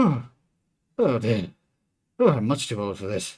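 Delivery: out of breath. Describing a character finishing the building, voicing her at the end: panting. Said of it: "she is very much panting".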